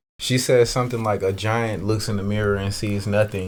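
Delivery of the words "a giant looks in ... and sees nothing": ordinary talk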